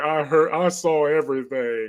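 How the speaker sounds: mock crying, tearful voice. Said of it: "walks up to him crying like".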